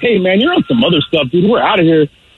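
ordinary talk

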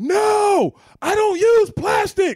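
very loud, very high, slow, shrill, drawn-out. Retelling a customer refusing a plastic bag: imitating a loud customer. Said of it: "she said it so loud".

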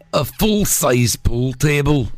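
put-on Scottish accent. Giving others a phrase to sound scottish, demonstrating it in a scottish accent. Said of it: "so you sound Scottish".

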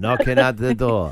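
horror-film vampire voice with Transylvanian accent. Asked to redo the accent for the knocking line, in a Dracula accent. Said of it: "My Dracula".

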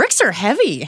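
amazed and surprised. Showing different ways to say one phrase, first as if surprised. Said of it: "You can say it as if you're surprised".

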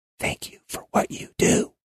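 soft, breathy whisper under the breath. Retelling how people lean in and thank him: imitating someone whispering. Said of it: "maybe touch my shoulder and whisper".

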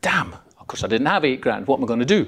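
plain

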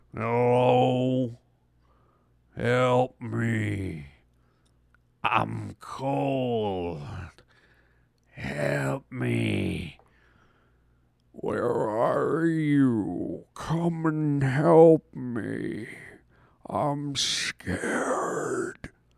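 put-on deep, slurred creepy ghost voice. Imagining the ghost in a ghost story calling out, put-on slurred ghost voice. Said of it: "had kind of a slurred voice".

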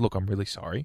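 ordinary talk, nothing marked

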